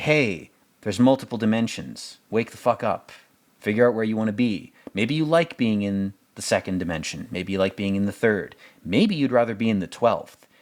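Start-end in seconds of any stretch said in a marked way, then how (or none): none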